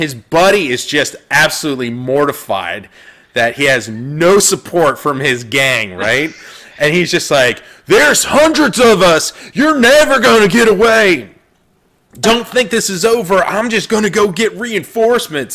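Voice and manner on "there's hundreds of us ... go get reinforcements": high, loud yelled scream. A fleeing gang member shouts back at his pursuer, screaming while fleeing. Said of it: "he's screaming behind him".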